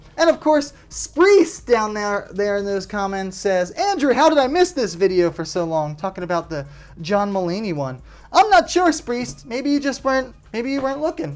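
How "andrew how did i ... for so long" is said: ordinary delivery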